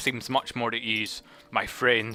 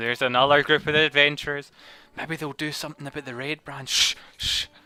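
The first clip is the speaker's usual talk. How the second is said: crowd murmuring among themselves; 3 semitones higher than usual. Voicing townsfolk who recognise a group of adventurers: murmuring townsfolk. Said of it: "you hear them murmuring".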